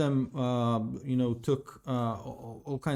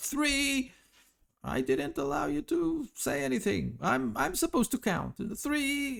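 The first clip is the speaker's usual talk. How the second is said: very high, ragged, rough creature yell; 13 semitones higher than usual. Voicing a kobold who shouts at the others while counting: kobold shouting. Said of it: "one of them shouts".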